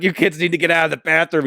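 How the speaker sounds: loud, shrill screaming. Recounting a woman yelling at kids to leave a boys bathroom, retelling a scream. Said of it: "So she's screaming".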